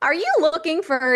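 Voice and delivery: happy, bright, joyous infomercial sales-pitch voice. Showing how you get the infomercial voice: joyous, happy infomercial voice. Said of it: "if you just want to sound joyous and happy, that's how you get the infomercial voice".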